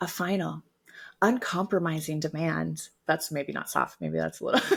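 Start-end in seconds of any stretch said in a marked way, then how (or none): 0.0-2.8 seductive, sultry, come-hither delivery. Jen rereads a formal text at the host's request, in a sexy-sounding voice. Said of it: "That sounded sexy".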